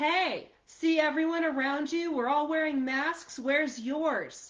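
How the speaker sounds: loud yelled hollering. Retelling a guy in a store who came up with a cart: imitating a guy yelling. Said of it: "this guy yelling".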